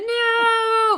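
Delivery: high-pitched horrified scream, "no" drawn out long. Hearing that a young woman had fourteen worms in her eyes: screaming in horror. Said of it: "Sorry, I'm screaming again".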